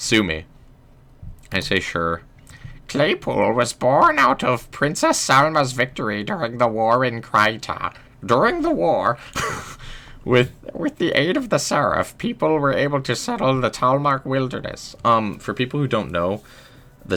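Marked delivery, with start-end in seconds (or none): 2.9-14.9 put-on high, swooping elderly woman voice. Narrating to chat, in an old lady voice. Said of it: "we're going to keep going with the old lady voice".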